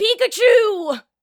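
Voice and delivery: high, very loud, full-out anime-hero cry. Trying to get your old character voice back before getting into the game, do your Ash Ketchum voice. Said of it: "let me try to get my actual old Ash Ketchum voice".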